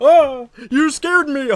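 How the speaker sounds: very loud, drawn-out, exaggerated startled cry. Retelling how people reacted while being rushed past: imitating an over-exaggerated startled reaction.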